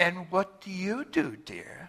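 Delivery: mock condescending tone, soft and sing-song. Retelling what a lady asked a stay-at-home mom after a meeting, mock-condescending voice. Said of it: "in sort of a condescending voice".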